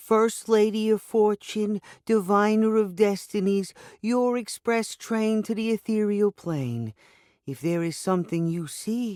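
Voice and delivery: very high attempted Eastern European accent. Madame Mysteria introduces herself to the narrator, attempting an Eastern European accent. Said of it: "attempting an Eastern European accent".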